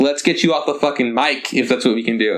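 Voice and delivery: ordinary talk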